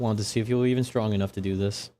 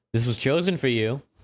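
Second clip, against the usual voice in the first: loose, half-yelled, raised, projected shout; 4 semitones higher, 3 dB louder than usual. Describing the Glimp calling after you as you walk off, the Glimp yelling. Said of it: "the Glimp is kind of like yelling at you".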